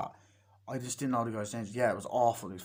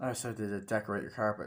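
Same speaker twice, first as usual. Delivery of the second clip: usual speaking voice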